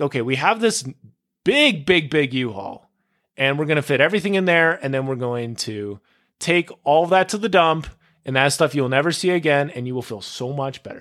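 ordinary talk

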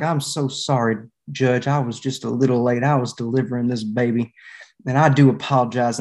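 put-on silky, smooth-talking Arkansas accent. A late arrival comes down the aisle and addresses the judge, imitating the smoothest Arkansas accent. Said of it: "Arkansas accent to the extent there is one".

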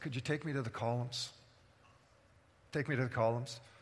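soft, hushed, private-sounding half-whisper. Retelling how Samson speaks to his servant, imitating a half-whisper. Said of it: "Samson whispers to his servant".

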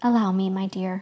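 plain reading voice

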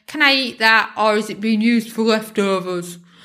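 put-on begrudging, grumpy teenage grumble. Quoting what Carl often asks, imitating Carl's grumpy teenage tone. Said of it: "In that kind of grumpy teenage tone".

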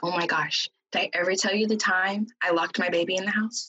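ordinary talk

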